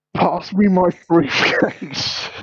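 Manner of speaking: high-pitched scream with words dragged out. Telling a story about a car crash, quoting a man who screams, retelling a scream. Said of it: "Then he screams".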